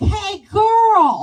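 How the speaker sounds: put-on very high, very loud, shrill, long child voice. Retelling how the kid outside greeted her: imitating a kid's accent. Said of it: "It's like his accent".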